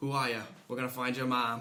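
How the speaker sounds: put-on hint of Boston accent. Discussing a film scene, quoting a character's line with a slight boston accent. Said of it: "a little bit of the Boston accent comes out".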